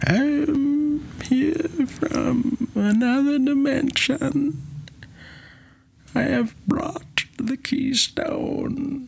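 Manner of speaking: high, slow, otherworldly put-on voice. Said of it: "you can't do Coswald".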